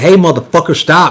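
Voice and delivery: yell called out lightly. Retelling shooting at a running deer, retelling a yell. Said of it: "And I just yelled".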